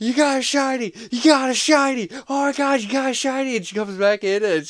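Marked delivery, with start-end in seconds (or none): 0.0-3.6 very high, loud, shrill, piercing screams. Retelling how he fooled his partner about a game: imitating his own screaming. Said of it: "I'd just start screaming".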